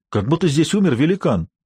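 ordinary delivery

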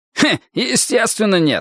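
very high, barked, sharp delivery. A man answers a newcomer's claim, barked. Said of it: "рявкнул Вуди".

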